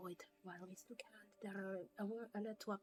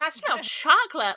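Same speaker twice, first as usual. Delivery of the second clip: put-on very loud, pitched-up valley girl gush; 8 semitones higher, 26 dB louder than usual. Retelling what a woman said after sniffing, in a valley girl voice. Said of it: "Now she's a valley girl".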